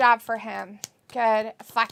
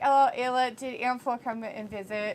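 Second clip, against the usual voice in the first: normal talking voice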